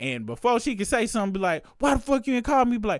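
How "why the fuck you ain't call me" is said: high, fed-up, angry outburst. Acting out calling back a partner who hung up: imitating going off angrily. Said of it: "This time you about to go off".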